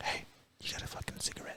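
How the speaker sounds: whispering. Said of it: "whispering in your ear".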